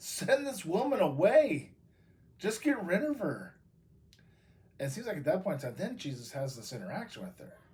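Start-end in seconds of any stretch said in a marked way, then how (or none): 0.0-3.6 high, loud begging tone. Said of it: "they begged Jesus to send her away".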